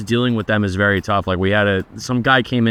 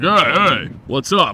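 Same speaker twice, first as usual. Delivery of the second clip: slow, drawn-out, obnoxious jerk-like manner; 5 semitones higher than usual. Showing how someone who is a tool greets people: acting like a tool. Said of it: "I could be considered, like, a tool if I was like".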